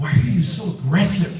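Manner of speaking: ordinary talk, nothing marked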